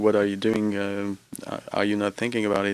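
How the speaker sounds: ordinary talk, nothing marked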